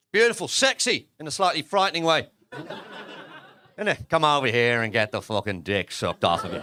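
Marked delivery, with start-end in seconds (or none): 4.1-6.6 put-on Irish accent in a very deep voice. Speaker to the audience, after saying he loves the accent, delivers a line in an Irish accent. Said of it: "I love an Irish accent".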